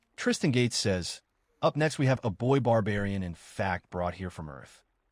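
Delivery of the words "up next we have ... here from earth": normal talking voice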